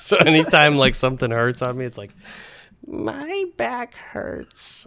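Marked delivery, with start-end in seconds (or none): 2.9-4.9 put-on tiny, very high little old lady voice. When something hurts, speaker slips into the old lady voice from Happy Gilmore. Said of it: "the voice from from Happy Gilmore when the little old lady".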